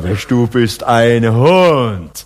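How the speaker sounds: very slow, admiring delivery, "Hund" stretched out.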